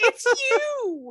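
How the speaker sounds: fake, very high, loud, tearful sob. Acting out running into someone at a Walgreens: mock crying. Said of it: "fall into a heap and cry and be like".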